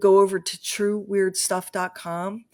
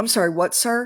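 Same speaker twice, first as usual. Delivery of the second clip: put-on confused voice, higher pitch; 3 semitones higher than usual. Acting out an imagined fast-food scene: imitating a confused cashier. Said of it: "the cashier would be like".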